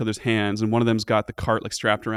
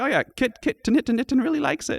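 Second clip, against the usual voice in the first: kobold creature voice, higher pitch. Voicing a kobold thanking the players for feeding the kitten: voicing a kobold. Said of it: "And he's like".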